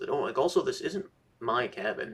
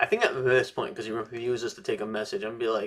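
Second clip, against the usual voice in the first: ordinary talk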